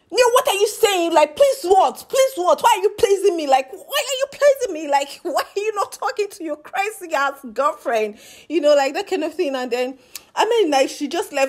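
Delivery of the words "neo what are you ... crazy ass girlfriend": high-pitched full-on yelling, voice raised. Recounting an argument between Neo and Ilebaye, imitating Ilebaye shouting. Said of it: "She not shouted like".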